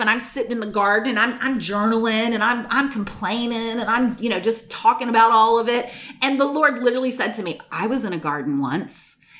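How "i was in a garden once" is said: very low, quiet, pointed sarcastic delivery. Retelling what the Lord said while the speaker journaled in a garden, mock-sarcastic. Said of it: "he said it so sarcastic".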